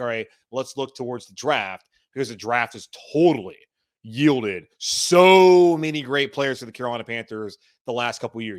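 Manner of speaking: thick, loud sarcasm with the word "so" stretched. Speaker discussing the Carolina Panthers fan base and the draft, sarcastic. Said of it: "You can hear the sarcasm in my voice".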